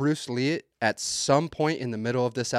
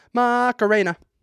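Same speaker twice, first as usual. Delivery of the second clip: high pitch with a showy flair; 11 semitones higher, 8 dB louder than usual. Imitating a father reading out a nickname with flair. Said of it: "He says it with some flair".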